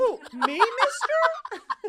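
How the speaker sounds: very high, loud, swooping sing-song voice. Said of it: "Why is everyone Tiny Tim?".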